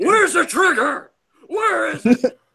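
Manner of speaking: high, loud, slow shout.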